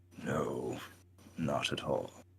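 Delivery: through gritted teeth. Narrating a tabletop scene, the narrator voices a troll's reply through gritted teeth. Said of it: "He grits his teeth".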